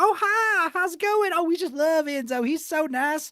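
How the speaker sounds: very high, slow, syrupy, sugary-sweet nice-lady voice. Retelling how the teacher greeted parents: imitating Miss Mahoney being sweet. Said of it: "she'd be like".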